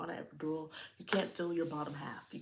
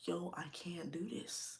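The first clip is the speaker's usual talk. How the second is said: put-on sobbing, quieter; 4 dB quieter than usual. Retelling a moment in labor, looking at husband: retelling own crying. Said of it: "I'm boohoo crying".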